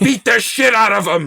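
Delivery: put-on very high, rough, hoarse, loud yelling voice. Retelling a deleted scene where Mickey's ghost yells to Rocky: imitating Mickey yelling. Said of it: "he yells".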